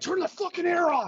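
mock furious, angry scream, very high. Act out a man stopping a concert, pissed off about the air conditioning, imitating someone screaming. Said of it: "start screaming like".

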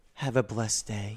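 very deep, placid, unruffled, serene voice. Retelling a man who turned and spoke to him as he passed, imitating a calm voice. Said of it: "He turns slowly and calmly and looks at me and just goes".

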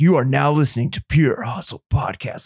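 put-on old-school monster truck rally announcer voice. Suggesting an opening stinger for the podcast: old school monster truck rally announcer. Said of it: "like old school, like, uh, monster truck rally, like, announcer".

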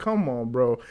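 ordinary delivery

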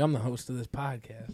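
teasing, taunting, ribbing voice. Mimicking another speaker boasting about being the host: mocking imitation of a friend. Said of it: "He's like".

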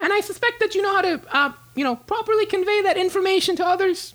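squeaky, very high halfling wizard voice. Narrating the game, voicing the halfling wizard who does the hiring, halfling wizard voice. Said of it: "the door opens up and you see a halfling walk in, / He is one of the top wizards here at our school, and he He does most of the hiring. / the door opens up and you see a halfling walk in, / He is one".

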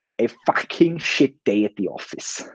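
put-on German accent, leaned into. Quoting what the man of the Mercedes F1 team would say, in a put-on Toto Wolff accent. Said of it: "as Toto Wolff of Mercedes Petronas F1 AMG team would say".

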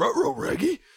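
talking cartoon dog voice. Retelling a Scooby-Doo episode, quoting the dog: Scooby-Doo voice. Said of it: "Scooby-Doo's like".

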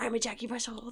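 put-on dog voice. Giving a dog the voice its owner uses: voicing a Jack Russell dog. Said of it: "whoever owns it has its own voice for him".

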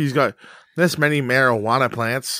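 lame, mocking tattletale-style voice. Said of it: "You sound like such a narc".

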